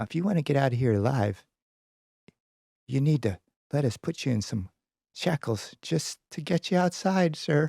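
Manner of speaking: half-whispered, no voice. Narrator voicing a guard who leans in to a captive, half-whispering. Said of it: "he kind of whispers".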